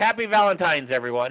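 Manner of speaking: plain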